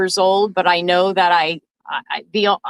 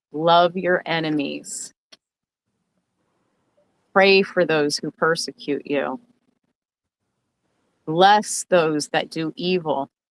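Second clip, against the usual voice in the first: much slower pace; 3 semitones lower, 4 dB quieter than usual. Quoting a friend's words to an audience, speaking slowly so everybody hears. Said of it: "I'm going to say it slowly".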